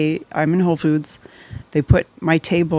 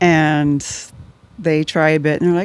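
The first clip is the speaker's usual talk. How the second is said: ordinary talk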